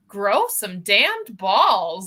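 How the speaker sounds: overdone narration with far too much inflection. Complaining about an audiobook narrator, mocking her over-inflected narration. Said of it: "way too much inflection in her voice".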